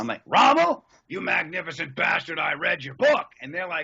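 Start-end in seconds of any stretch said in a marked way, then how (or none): 0.3-3.3 loud, bellowing, full scream. Retelling riding around in a tank suit, screaming lines from Patton. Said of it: "I'm screaming every line I could think of".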